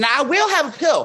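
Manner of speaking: put-on high-pitched Southern American accent. Retelling own words to a friend, in a Southern accent. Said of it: "forbidding me to speak in my Southern accent".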